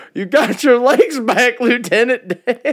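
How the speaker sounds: very high, loud, dopey yell. Mocking how a film character sounds when he yells: Forrest Gump yelling impression. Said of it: "That's how stupid he sounds whenever he yells".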